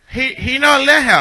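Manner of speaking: put-on Jamaican accent. A caller on the phone asks for someone; fake Jamaican accent. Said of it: "Is that a Jamaican accent I hear?".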